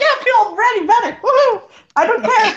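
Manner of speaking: mockingly cheerful tone. A player mimicking how another character sounded after saying he felt better, mock-happy. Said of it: "He sounds so happy, like".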